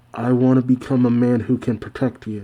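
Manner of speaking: plain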